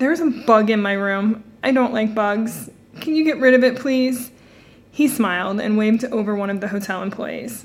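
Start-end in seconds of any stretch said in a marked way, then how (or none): none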